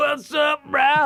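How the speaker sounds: very high, tripping, spaced-out delivery. Retelling how a drummer greeted him at a concert: imitating someone high on acid. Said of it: "he was, like, on acid or something".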